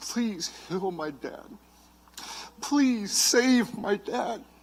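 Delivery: mock soft, very slow, begging tone. Retelling praying for a dad's healing, reenacting pleading with God. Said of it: "and I pleaded with God".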